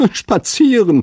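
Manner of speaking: scoffing laugh, pitched very high. Narrator reading the hare's reply to the hedgehog, laughing. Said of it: "sagte der Hase lachend".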